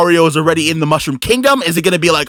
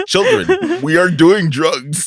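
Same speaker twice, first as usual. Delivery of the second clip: swooping, casual, natural, unacted delivery. Imagining an actor in the movie who stops acting: imitating Seth Rogen. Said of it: "He just goes".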